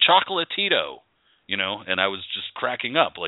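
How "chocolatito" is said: put-on very high-pitched voice with American accent.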